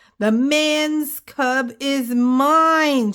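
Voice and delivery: high, slow growl with the last word stretched. Narrator reads Mother Wolf facing the tiger in the cave, growling. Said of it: "she growled".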